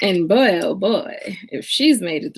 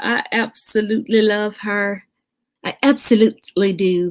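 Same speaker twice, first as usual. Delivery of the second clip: rough, unpolished put-on British accent. Praising a woman she just connected with, in a British voice. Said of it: "That's my British voice".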